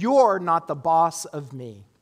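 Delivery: furious, defiant, put-on angry child voice. Acting out a child defying a parent: imitating an angry child's declaration. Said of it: "fury in their voice and declare".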